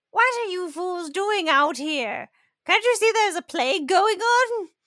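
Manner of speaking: put-on older woman voice. Voicing an older woman who scolds the party in the street: older woman character voice. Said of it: "an older woman who looks fairly healthy kind of stumbles out into the street and is like".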